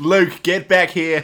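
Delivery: very loud, high shout with Australian accent. Voicing a dad calling Luke back: Home and Away dad voice. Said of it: "You sound like the dad from Home and Away now".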